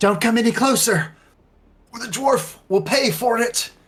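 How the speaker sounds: very high, loud, straining monster voice. Mid-fight in a tabletop game, the narrator voices a creature: strained creature voice. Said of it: "You can hear the strain in, in the creature's voice".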